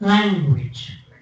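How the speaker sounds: stress on first syllable LAN in language. Showing a class how to say the word: stress on lan in language. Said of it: "the first word is stressed on the first syllable".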